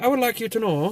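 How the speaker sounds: attempted Irish accent that lands in Minnesota. Retelling doing voices for a guy who thought they were from Ireland, failed Irish, sounds Minnesotan. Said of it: "That's more like Minnesota".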